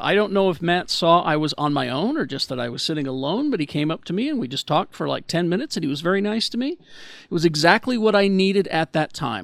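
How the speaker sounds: plain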